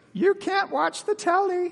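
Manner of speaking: very high, squawking British parrot voice. Retelling a play scene, voicing the parrot: british parrot voice. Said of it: "It's a British parrot".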